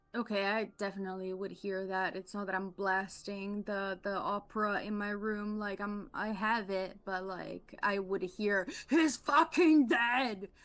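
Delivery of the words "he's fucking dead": very loud, high-pitched, full-volume shout. Repeating a line a player character shouted, Schwarzenegger impression. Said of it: "such a great Schwarzenegger impression".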